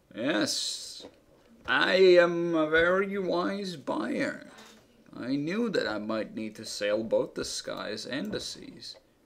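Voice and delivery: drawn-out ancient monster voice. Game master voices the old minotaur who owns the boat, addressing players: slow old minotaur voice. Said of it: "He's a very old minotaur. / He's a very old minotaur. ... He's a slow old minotaur. / He's a very old minotaur. / He's a very old minotaur. / He's a slow old minotaur".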